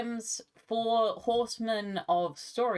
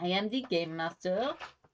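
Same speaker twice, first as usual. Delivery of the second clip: phrase spoken in a put-on French accent. Voicing the faceless Game Master in their game, in a French accent.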